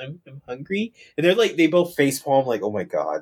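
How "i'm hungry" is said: put-on timid voice, quieter. Retelling a dub scene where Shu is coached to say he's hungry, imitating Shu's timid voice. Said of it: "Shu's like in a really timid voice".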